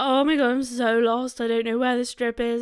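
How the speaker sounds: put-on terrified, lost, bawling sobs. Retelling telling a stranger about being lost: retelling bawling. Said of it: "literally bawling my eyes out".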